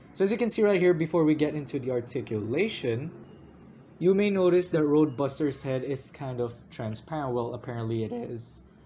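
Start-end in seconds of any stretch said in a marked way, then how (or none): 7.3-8.6 voice cracking and breaking. Explaining a Transformers figure to viewers, voice cracking. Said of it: "my voice cracked right there".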